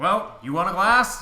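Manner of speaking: high, loud, hearty host-like voice.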